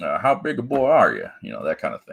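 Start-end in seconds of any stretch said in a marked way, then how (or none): 0.2-1.3 high, twangy country voice, slightly exaggerated. Showing that you can do the voice too: Roy D. Mercer voice. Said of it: "I got a little more country twang when I try to do it".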